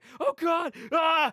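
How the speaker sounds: very high, loud, frantic freaking out. Retelling a prank on someone locked in a car trunk: imitating someone freaking out. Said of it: "just freaking out like".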